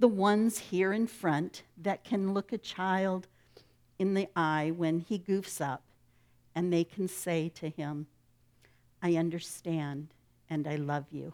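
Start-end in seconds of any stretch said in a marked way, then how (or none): none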